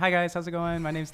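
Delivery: high, polite customer service voice. Speaker shows how they greet people: customer service voice. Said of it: "I have like a customer service voice".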